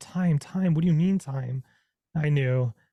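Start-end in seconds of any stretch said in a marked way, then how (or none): 0.0-1.6 acted-out frantic, freaked-out, panicked, disbelieving. Retelling hearing that it was time: retelling own panicked words. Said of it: "I started freaking out".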